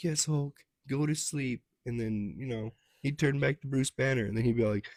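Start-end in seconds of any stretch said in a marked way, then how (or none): 0.0-1.6 higher-pitched woman's voice, pitch lifted. Retelling a Hulk movie scene, acting out Betty Ross calming Hulk: imitating Betty Ross. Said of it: "And then she'd be all like".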